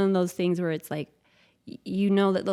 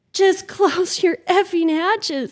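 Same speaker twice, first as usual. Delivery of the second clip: very high, very loud tearful crying scream; 12 semitones higher, 8 dB louder than usual. Recounting rough seas on the boat, yelling to the kids: retelling screaming, crying. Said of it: "And I'm screaming to the kids".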